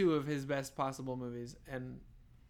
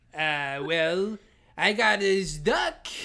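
loud, very slow, drawn-out silly funny voice; 4 semitones higher, 6 dB louder than usual. Imitating a film scene line by line: Adam Sandler voice. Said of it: "Adam Sandler going".

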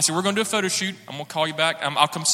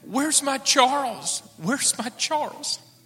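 mock frantic, very high, drawn-out, repeated delivery; 9 semitones higher than usual. Retelling a phone call from an aunt looking for Charles, imitating a frantic caller. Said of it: "frantic aunt calling about missing nephew".

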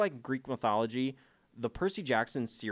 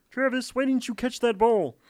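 shrill, very high, loud, squealing puppet voice; 13 semitones higher, 9 dB louder than usual. Podcaster imitating Patrick Mahomes talking to Travis on the field: Kermit the Frog voice. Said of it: "I love doing a Kermit the Frog impression".

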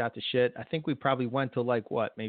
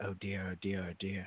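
very quiet, low murmur, half to oneself; 4 semitones lower, 8 dB quieter than usual. Recalling something Haas says, imitating Haas going real quiet. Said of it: "he goes real quiet and he goes".

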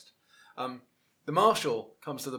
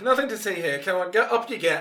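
loud, raised, pitched-up voice; 7 semitones higher, 7 dB louder than usual. Voicing the marshal who breaks up the scuffle: saying it more loudly. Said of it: "he says more loudly".

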